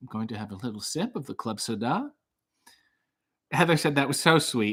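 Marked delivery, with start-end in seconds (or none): 0.0-2.1 low, hushed murmur with a mispronounced food name. Trying out your new character while having a drink, as Stanley Tucci mispronouncing foods. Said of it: "my new character is Stanley Tucci mispronouncing foods".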